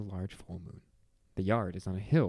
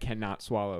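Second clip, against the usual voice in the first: ordinary talk, nothing marked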